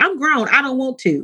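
put-on sassy voice. Retelling what a dear friend says, imitating a friend's sassy tone. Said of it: "she says it seriously, but she's sassy".

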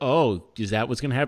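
ordinary talk, nothing marked

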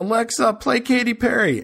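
loud, shrill, put-on kid voice yelling. A parent acting out their daughter running up to the speaker, imitating her yelling. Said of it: "just yells".

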